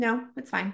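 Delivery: mock toneless, flat, level monotone. Recalling offering help as a child, the speaker is imitating mom's flat tone. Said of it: "she would have this flat tone".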